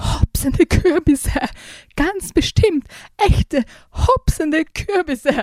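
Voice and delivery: shaking, quavering, trembling, high-pitched voice. Leon comes back to Kevin, trembling voice. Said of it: "zitterte seine Stimme".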